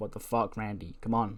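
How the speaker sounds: ordinary talk, nothing marked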